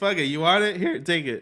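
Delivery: cracking, breaking voice going up high. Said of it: "my voice crack".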